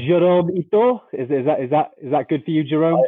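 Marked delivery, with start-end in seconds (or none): 0.0-1.0 put-on bad French accent, much higher. Asked to pronounce someone's name with a French accent, trying a bad French accent. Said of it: "pronounce my name with a French accent".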